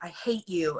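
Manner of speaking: mock earnest, dead serious, plain delivery. Retelling the first serious take of a line in a show: retelling own serious line. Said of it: "I was being all serious".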